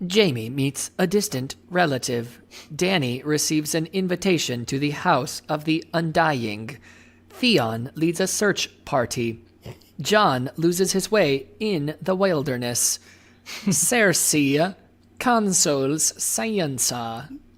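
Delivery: robotic, machine-like, computer-style reading. The speaker reads a summary they think a computer wrote, reading like a computer. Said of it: "I'm gonna read it like a computer".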